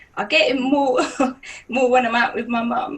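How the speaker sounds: tearful, voice breaking, speaking through tears. Talking about getting looks when out with mum, crying while speaking. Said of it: "I don't know why I'm crying".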